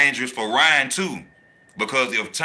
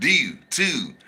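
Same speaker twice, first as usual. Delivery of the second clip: put-on Baltimore accent on do and too. Showing how people in Baltimore say words: put-on Baltimore accent. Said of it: "that the Baltimore accent. I love how they say that".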